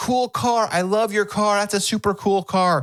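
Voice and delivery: high, called-out shout. Retelling how a passing girl called out to the driver: imitating a girl screaming out. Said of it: "one of them screams out".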